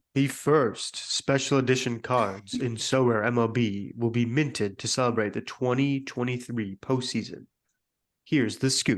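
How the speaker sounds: smooth, polished radio announcer voice. Asked by the others to let them hear his radio voice: radio announcer voice. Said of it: "Let's hear your radio voice".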